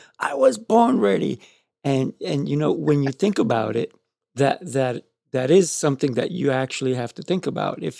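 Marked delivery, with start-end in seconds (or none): 0.2-1.4 put-on very high, screaming kid voice. Retelling how a four-year-old answered the question: imitating a kid screaming. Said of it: "he's screaming at me".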